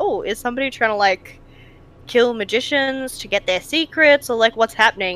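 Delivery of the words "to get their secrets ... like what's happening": ordinary talk, nothing marked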